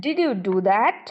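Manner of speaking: skeptical, doubtful pitch rise on "that". Explaining an expression, speaker shows how to voice it: doubtful tone. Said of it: "I want to express my doubt".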